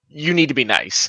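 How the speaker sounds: stern, reproachful scolding tone. Scolding a tree in character with a stern look: stern, scolding tone. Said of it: "I'm giving it a look like".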